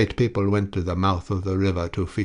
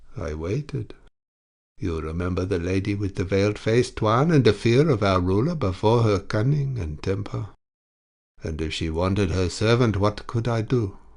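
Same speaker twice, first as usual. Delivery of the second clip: usual speaking voice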